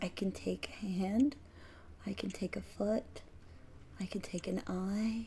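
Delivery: whispered, very soft, barely audible. Voicing a character who whispers to the listener, whispering. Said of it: "she whispers to you".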